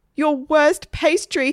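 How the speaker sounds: high, stressed, frantic shout. Egbert, a knife at his chin, answers the waitress's question: shouted. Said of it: "shouted Egbert".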